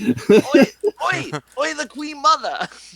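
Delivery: very high, bad put-on Cockney accent. Coaching another speaker's Cockney attempt, speaker shows how in a Cockney accent. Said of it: "I'm supposed to do a terrible Cockney accent".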